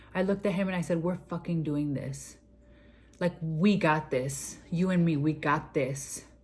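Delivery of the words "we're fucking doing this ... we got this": low, caring, empathetic, loving and reassuring. Speaker retells what she said to her doctor: retelling an empathetic, loving voice. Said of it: "with the most empathetic, loving [name] face and voice".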